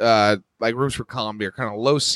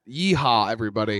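usual speaking voice

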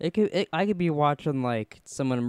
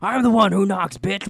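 full-blast, very loud, high yelling; 9 semitones higher, 9 dB louder than usual. Imagining Walt yelling at kids in a game: imitating Walt yelling. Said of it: "He goes".

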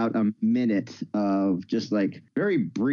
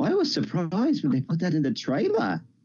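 put-on high, swooping, sing-song British girl voice; 7 semitones higher than usual. Quoting an actress's remark about the trailer: Daisy Ridley impression. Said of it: "my best skinny British girl, uh, impression".

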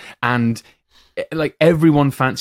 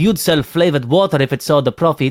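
clumsy, unconvincing put-on French accent; 3 semitones higher than usual. Quoting an unforgettable line from a strangely watchable film, imitate the actor's terrible French accent. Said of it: "That is his French accent".

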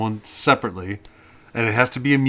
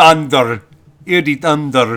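exaggerated mock Italian accent, higher and louder; 5 semitones higher, 9 dB louder than usual. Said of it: "with a heavy Italian accent".

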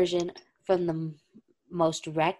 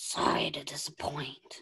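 hushed, breathy, almost whispered delivery; 3 semitones lower, 8 dB quieter than usual. Reading Derek's line from a story aloud: Joker voice. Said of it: "Why am I sounding like the Joker instead of Derek?".

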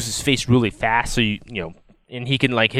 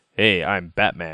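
slightly deeper, smooth, suave hero voice; 5 semitones lower than usual. Comparing Batman versions: Adam West's Batman voice, a bit deeper. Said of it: "just a little bit deeper".

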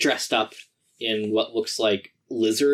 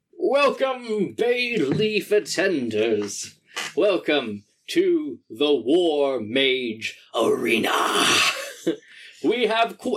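big wood elf arena announcer voice, higher; 4 semitones higher than usual. Voicing an announcer welcoming the crowd to the arena: big wood elf arena announcer. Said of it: "a very big wood elf man comes out to the center of the arena and says".

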